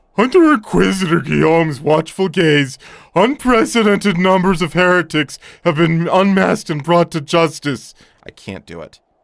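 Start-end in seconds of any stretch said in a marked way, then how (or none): 0.2-7.9 booming, very loud, clumsy put-on cartoon voice. Reading a game character's dialogue aloud, in a Patrick voice. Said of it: "I don't do a good Patrick voice".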